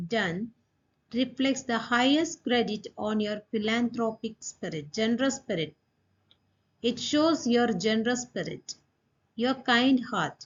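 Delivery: ordinary talk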